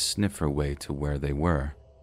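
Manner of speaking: ordinary delivery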